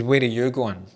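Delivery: angry, demanding tone. Retelling own question to a leaving shadowy being: imitating an angry tone. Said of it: "with an angry tone".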